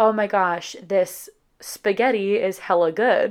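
usual speaking voice

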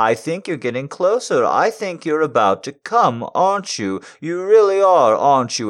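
condescending, patronizing voice. Addressing the listener directly, condescending voice. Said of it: "The condescending voice doesn't hurt at all".

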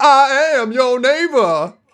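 very slow, very high, loud, heartfelt, emotional voice. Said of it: "more loud, more emotion".

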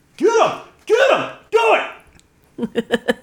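mock yelling. Recounting watching the episode together, acting out yelling at the TV. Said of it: "and I'm yelling at the TV".

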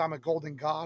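plain

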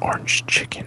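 seductive, sensual, breathy, lingering whisper. Saying a dish name to the others as a joke: mock sensual whisper. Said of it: "a very sensual whisper of orange chicken".

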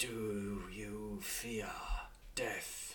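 very slow, deep, rumbling dragon whisper. Voicing a dragon that whispers in a knight's ear: deep rumbling dragon whisper. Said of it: "and it whispers".

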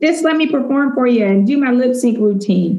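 high, pleading, daring and challenging call. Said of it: "I'm calling her out".

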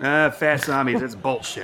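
put-on Texan accent.

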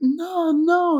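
high, loud alarmed protesting tone.

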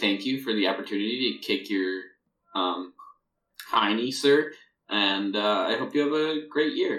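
courteous, gracious, very polite put-on voice. Imagining thanking Santa Claus for a kick: imitating a very polite, gracious voice. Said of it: "I would be very polite".

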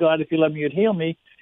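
normal talking voice

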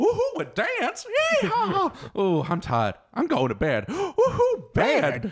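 very high, sing-song, swooping silly joke character voice. Recalling a favorite cookie joke, the speaker does an impression of its character. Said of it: "That was a great impression".

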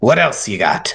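pushy, insistent, forceful and aggressive tone. Voicing a character who grabs an apple violently and demands more: aggressive demand. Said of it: "He grabs it almost violently and says".

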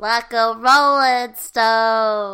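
very loud, very slow, Stone stretched out. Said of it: "how did your [name] impression go".

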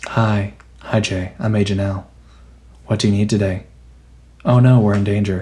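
deadpan, expressionless, flat, low monotone. Reviewing a cartoon series, the speaker imitates a character's delivery; Agent L monotone impression. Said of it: "she's just very monotone".

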